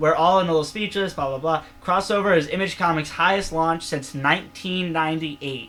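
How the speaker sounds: ordinary talk, nothing marked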